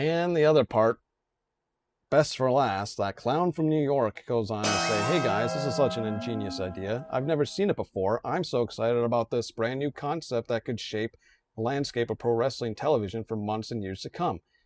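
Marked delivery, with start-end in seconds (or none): none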